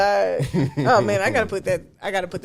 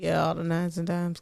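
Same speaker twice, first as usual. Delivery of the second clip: put-on bored deadpan, flat, unenthusiastic drone; 3 semitones lower, 7 dB quieter than usual. Acting out an unenthusiastic invitation to slide into DMs, mock flat, unenthusiastic. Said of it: "Like you have no enthusiasm with it".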